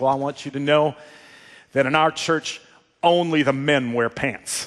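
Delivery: put-on Texan southern drawl. Retelling a Texas church man's answer to a crowd in Scotland, in a southern drawl. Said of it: "in his best southern drawl".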